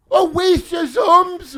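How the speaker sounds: high, loud, slow mock sob, a crying wail.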